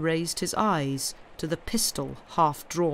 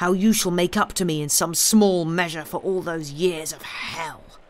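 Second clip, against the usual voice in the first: plain reading voice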